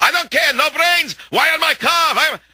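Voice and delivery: high, furious screaming in a Russian accent.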